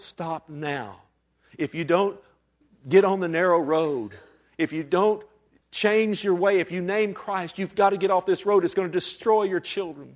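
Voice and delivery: earnest, urgent pleading with full intensity. Recounting begging parents not to let their daughter do this, reenacting own pleading. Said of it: "I pleaded on my knee with them".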